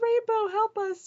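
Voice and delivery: yelling out loud.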